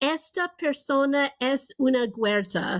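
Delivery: accent of Ladino. Saying a Ladino compliment aloud before translating it: attempted Ladino accent. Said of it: "I'm going to do my best Ladino accent".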